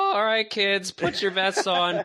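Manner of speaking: very high, cracking, drawn-out call. Imitating the laser tag attendant handing out vests: imitating the attendant with a cracking voice. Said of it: "doing an impression of, like, the attendant 'cause your voice cracked".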